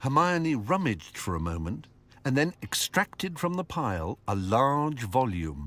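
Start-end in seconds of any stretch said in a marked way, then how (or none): none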